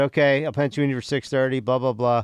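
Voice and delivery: ordinary talk, nothing marked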